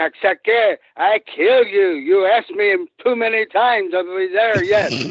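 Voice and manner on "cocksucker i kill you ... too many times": slow put-on French Canadian accent, words spaced out. Retelling what Brute said after throwing the sandwiches, imitating Brute's French Canadian accent. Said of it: "and he's French Canadian, and he goes".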